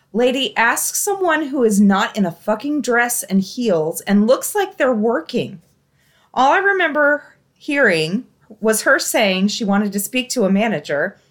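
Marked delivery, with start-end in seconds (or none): none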